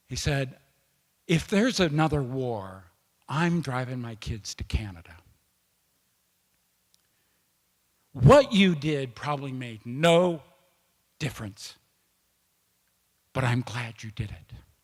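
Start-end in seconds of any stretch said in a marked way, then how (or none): 1.2-14.5 put-on whisper, lower. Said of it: "in a whisper".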